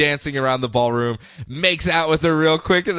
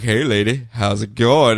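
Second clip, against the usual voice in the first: put-on seductive voice, much lower; 5 semitones lower than usual. Retelling a scene where Dick Grayson walks up to a lady, as a mock-seductive Dick Grayson line. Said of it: "basically seduces the living, loving crap".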